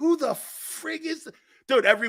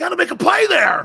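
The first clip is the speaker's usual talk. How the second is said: put-on screaming voice, higher-pitched and louder; 9 semitones higher, 8 dB louder than usual. Retelling how a coach screamed at players: imitating Buddy Ryan screaming. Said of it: "he's screaming at us".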